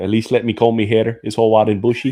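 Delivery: put-on Scottish or Irish sounding accent. Recalling a podcast host, the speaker imitates his Scottish or Irish accent. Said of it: "I think that's a Scottish accent or an Irish accent".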